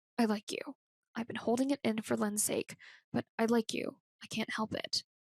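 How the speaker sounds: low, hushed, urgent voice. Reading a novel's confession scene aloud: low urgent voice. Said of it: "In a low, urgent voice, he says".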